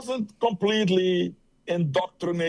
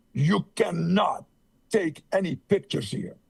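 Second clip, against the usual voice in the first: put-on severe, stern, firm, no-nonsense tone. Retelling what a woman said as she walked toward them, imitating a stern voice. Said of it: "with a stern voice".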